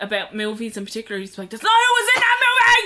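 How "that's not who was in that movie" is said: high, shrill, full-volume screaming. Retelling how Graham reacts to podcast mistakes: imitating Graham screaming. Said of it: "I'd say he's screaming at us".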